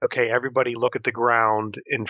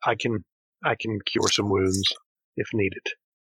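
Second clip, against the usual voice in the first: slow, half-whispered, in a character voice. Playing a character who quietly offers healing to Knucklemud: half-whispering in character. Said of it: "I'll just whisper it".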